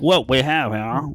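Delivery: loud, slow, drawling Southern lawyer voice. Showing how a southern lawyer character might talk: southern lawyer voice. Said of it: "like, a Southern, like, lawyer".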